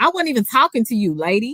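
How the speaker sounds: mock, on-the-defensive retort. Acting out how she talks back when defensive, acting out getting a little loud. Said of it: "I get a little loud".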